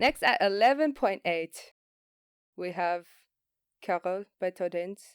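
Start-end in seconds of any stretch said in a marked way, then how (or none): 3.8-5.0 put-on French accent with French-style pronunciation. Announcing the next movie's title in a french accent. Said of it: "you said it in a French accent".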